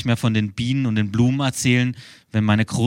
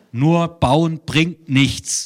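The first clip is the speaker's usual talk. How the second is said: pitched-up voice as over a bad phone line; 6 semitones higher than usual. Son on a phone call with his mother, shouting into the phone. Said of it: "schreie ich ins Telefon".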